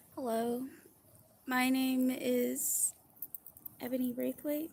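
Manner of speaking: anxious, on-edge, nervous and uneasy delivery. A speaker introduces themself before telling their story, nervous. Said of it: "sorry, I'm nervous".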